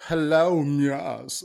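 high, put-on British accent, drawn-out "yes". Mocking an actor's fake accent: imitating an American's fake British accent. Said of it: "trying to be fake British, but American fake British".

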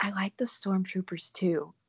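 confiding, leaning-in stage whisper. Quoting a girl who leaned in close to say something: retelling a whisper. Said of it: "She whispered".

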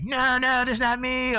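very high, stretched, drawn-out wailing scream. Retelling how people reacted when removed from planes: imitating women screaming.

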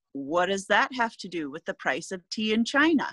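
usual speaking voice

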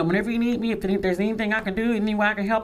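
ordinary delivery

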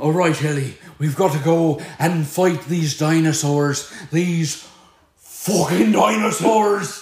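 loud, exaggerated, over-the-top stage Irish accent. Doing the Irishman's lines to Ellie before fighting dinosaurs, exaggerated Irish accent. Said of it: "I felt his Irishman coming out".

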